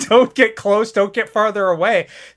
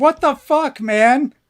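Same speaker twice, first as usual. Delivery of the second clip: very slow, drawn-out, startled, angry screaming; 4 semitones higher than usual. Recounting stumbling out of the woods, retelling a scream. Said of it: "stumbling out of the woods screaming".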